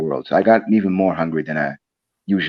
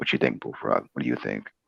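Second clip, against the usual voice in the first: put-on deep calm voice, much lower, quieter; 8 semitones lower, 10 dB quieter than usual. Trying out a new voice and asking Bullfrog's opinion, in a put-on deep calm voice. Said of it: "having my voice like this from now on".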